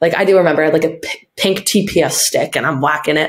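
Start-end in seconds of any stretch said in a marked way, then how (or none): none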